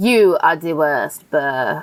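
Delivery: put-on low, slow, drawn-out, terrible French accent. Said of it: "his terrible French accent".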